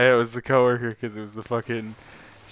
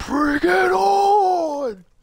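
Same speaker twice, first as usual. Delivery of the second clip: very high, shrill, drawn-out screaming yell; 3 dB louder than usual. Joking about what a father in an urn would say: imitating someone screaming. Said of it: "he's just screaming".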